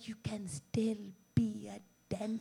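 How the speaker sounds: quiet, weird, creepy, put-on whisper. Retelling a mother's reply about a career: imitating mom's weird creepy whisper. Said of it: "doing this weird, creepy whispering".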